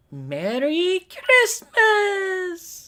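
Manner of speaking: very high voice, going way up and cracking. Trying out the voice of the Lolly character, high Lolly voice, cracking. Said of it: "My voice breaks too hard, too much when I go high".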